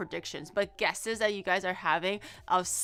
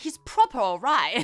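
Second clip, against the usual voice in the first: loud, heavy, emphatic stress on the word proper; 6 dB louder than usual. Explaining how accent and emphasis change a phrase, accent, stressing 'proper'. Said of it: "it's all in the accent and the emphasis".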